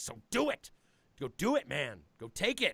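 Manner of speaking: intense, swooping, serious delivery. Retelling a friend's advice backstage: imitating a serious, intense pep talk. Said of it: "gave me this very serious and intense look and was just like".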